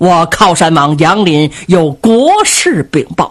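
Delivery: ordinary delivery, nothing marked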